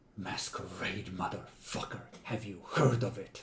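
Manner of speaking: low, seething, very angry half-whisper. After the beer spills, the character leans in closer: very angry half-whisper. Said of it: "leans in closer at a whisper that is very, very angry".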